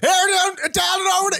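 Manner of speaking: very high, fake put-on Southern accent. Trying an accent again after a co-host teases it: put-on southern accent. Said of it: "let me try again".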